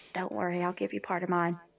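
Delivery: hushed whisper. Leaning over toward another character with a hand out, whispering to him.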